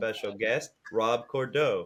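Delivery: low, flat, unvaried monotone drone. Introducing the show's special guest, doing a monotone Wade impression. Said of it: "very monotone that you were trying to sound like me".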